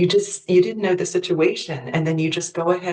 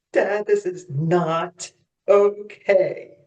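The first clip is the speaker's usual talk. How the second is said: very slow, drawn-out, even slower. In a guided exercise, told to say the phrase even slower, very slowly. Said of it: "Say it even slower".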